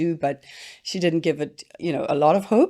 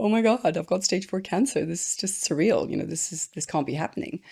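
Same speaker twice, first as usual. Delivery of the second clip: put-on crying and shaking, pitched much higher; 3 semitones higher than usual. Speaker recalls calling their husband from the car, retelling crying and shaking. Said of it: "shaking, crying, going".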